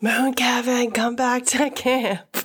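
hushed whisper. Whispering a message calling someone back to camp: whispering. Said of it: "I can try to whisper to come back".

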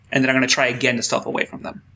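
normal talking voice

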